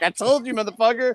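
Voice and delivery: put-on smug, gloating tone. Imagining a friend gloating about being right: imitating smug Fam. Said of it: "he's gonna be all smug".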